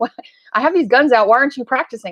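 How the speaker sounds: put-on, high-pitched, mild half-yell. Retelling being yelled at for not practicing: imitating someone yelling. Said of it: "He was yelling at me going".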